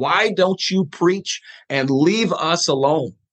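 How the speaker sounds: slow, mild put-on holler, kept small. Retelling a hostile meeting with a finger in the face: imitating someone screaming. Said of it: "he's screaming".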